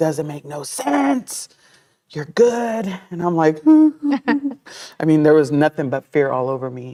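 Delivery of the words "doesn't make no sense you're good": screaming cry, pitched high. Recounting what a man screamed, retelling a scream. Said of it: "he was screaming like".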